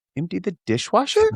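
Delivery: rising inflection. Retelling repeating her request back to her, with a rising questioning repeat. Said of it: "say them with an upward inflection".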